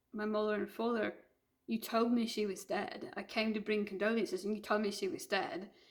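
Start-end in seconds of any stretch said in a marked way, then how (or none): none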